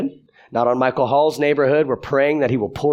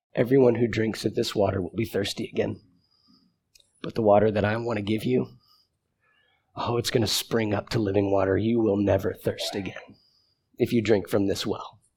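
put-on tender tone, quieter; 5 semitones lower, 7 dB quieter than usual. Retelling words he says to you, acting them out in a tender tone. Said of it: "in the most tender tone".

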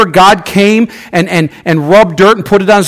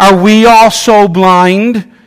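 usual speaking voice

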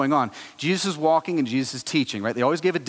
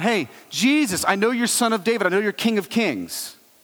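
loud yell, calling out; 6 semitones higher than usual. Retelling the beggar calling out from the crowd: imitating a beggar yelling. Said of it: "he's yelling out of the crowd".

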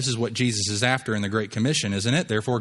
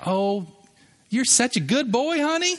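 put-on very high, sweet old-woman granny voice; 12 semitones higher than usual. Retelling a bible account, imitating a sweet older woman. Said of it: "Can't you just see a grandmother saying that?".

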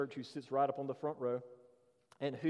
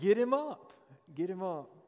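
play-acted loud, high-pitched shout; 5 semitones higher, 5 dB louder than usual. Retelling an older lady calling out to a guest preacher: imitating someone shouting.

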